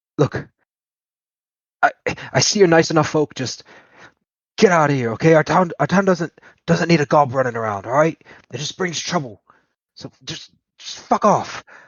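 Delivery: loud, high-pitched shout. Voicing men shouting from behind a tree cover: yelling out from cover. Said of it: "are gonna yell out".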